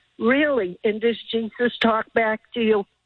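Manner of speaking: ordinary talk, nothing marked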